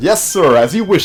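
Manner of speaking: high, loud, eager officer voice.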